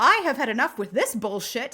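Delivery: ordinary talk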